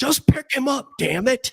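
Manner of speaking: very high, shrill, screaming voice. Retelling a parent on speakerphone through the door: imitating a parent screaming. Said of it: "through a speakerphone through the door screaming at me".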